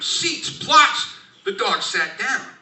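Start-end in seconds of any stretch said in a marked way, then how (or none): 0.0-1.1 play-acted, high, shrill, shouted yell. Retelling a friend yelling a command at his dog: imitating a yelled command. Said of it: "he yelled at him".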